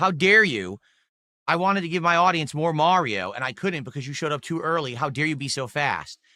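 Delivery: plain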